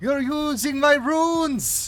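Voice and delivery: excited character voice. Voicing a character who sees a player using her runes: excited character voice. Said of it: "she gets, like, kind of excited".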